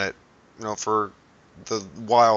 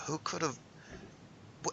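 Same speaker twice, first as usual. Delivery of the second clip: very soft, bewildered, puzzled whisper that breaks off; 8 semitones higher, 17 dB quieter than usual. Voicing a character looking around after hearing a voice: perplexed. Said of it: "perplexed sort of look".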